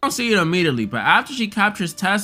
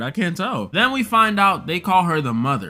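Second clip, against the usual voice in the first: ordinary delivery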